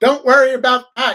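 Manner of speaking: loud, high-pitched yelling. Retelling how a girl's mother yelled at her, retelling a mother yelling. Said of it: "her mother yelling at her going".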